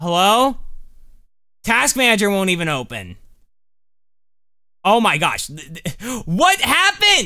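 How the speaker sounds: flustered, frantic panicking outburst with rising pitch. A streamer whose game and Task Manager won't close, panicking. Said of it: "I'm panicking!".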